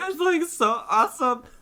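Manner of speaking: put-on very high, loud drunken shriek. Planning how to close the episode: mock drunken screaming. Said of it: "me drunkenly screaming".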